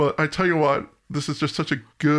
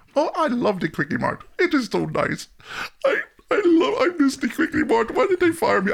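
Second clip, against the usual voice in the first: put-on Indian accent, higher, slower; 10 semitones higher than usual. Talking with another speaker about The Simpsons, the speaker does an Apu impression. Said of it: "That's my best Abu".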